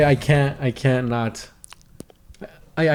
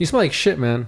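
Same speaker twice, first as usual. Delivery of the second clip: ordinary delivery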